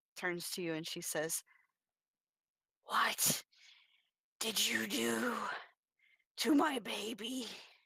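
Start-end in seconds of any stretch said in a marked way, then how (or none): 2.9-7.5 scratchy, scraping, very slow, drawn-out, halting voice. A game master voices a woman turning from a crib to a player, scratchy voice. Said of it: "her voice kind of scratches as it escapes her mouth".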